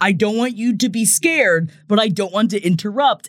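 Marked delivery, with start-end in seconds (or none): none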